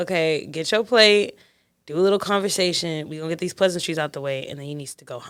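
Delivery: ordinary delivery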